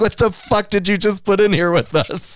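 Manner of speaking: mock-terrified animal voice. Telling how the chickens reacted to a new puppy, acting out terrified chickens. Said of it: "They were terrified".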